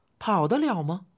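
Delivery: ordinary delivery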